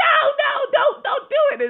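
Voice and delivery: shrill, very high, loud yell. Retelling how mom yelled at the computer: imitating mom yelling.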